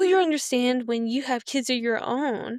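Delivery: ordinary delivery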